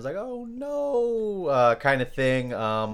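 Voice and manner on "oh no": higher, high-pitched put-on whining voice. Describing a dramatic character and imitating them: high-pitched whining voice. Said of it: "high-pitched, kinda whining voice at times".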